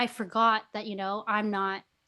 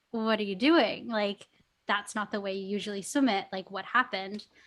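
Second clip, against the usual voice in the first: normal talking voice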